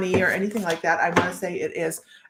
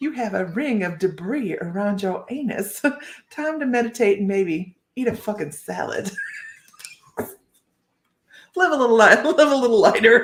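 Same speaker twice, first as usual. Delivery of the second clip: properly done, put-on Southern US accent. Reading the Karen card's message aloud, in a southern accent. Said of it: "This is only done properly in a southern accent".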